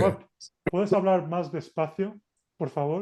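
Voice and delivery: ordinary talk, nothing marked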